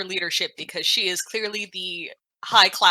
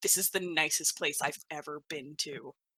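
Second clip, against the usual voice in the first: low, very quiet stage whisper; 4 semitones lower, 10 dB quieter than usual. Leaning in to a companion so everyone else overhears: loud stage whisper. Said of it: "in a loud enough whisper that everyone else can hear me".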